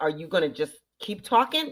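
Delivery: play-acted, loud, speaking out at full voice. Retelling confronting a talking woman in the theater: imitating own loud full voice. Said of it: "with my full voice".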